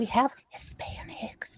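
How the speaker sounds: whispered, hushed, barely audible, under the breath. Imitating a grandmother saying the word Hispanics: imitating a whispered word. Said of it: "She has to whisper it".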